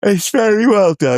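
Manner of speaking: very high words stretched out through a yawn. Discussing a film with others, yawning while talking. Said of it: "Sorry, I'm yawning".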